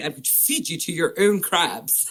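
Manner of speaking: put-on posh upper-class Etonian English accent. Recounting a funny scene, quoting a character, posh Etonian accent. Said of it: "in his posh Etonian accent".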